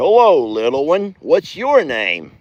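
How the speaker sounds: bouncy, swooping little sing-song voice. Voicing Chucky saying hello to the baby: voicing Chucky greeting the baby. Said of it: "He goes".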